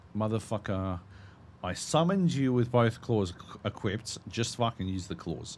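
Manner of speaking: normal talking voice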